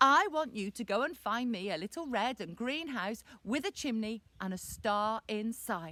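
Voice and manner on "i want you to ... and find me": usual speaking voice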